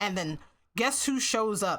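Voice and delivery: normal talking voice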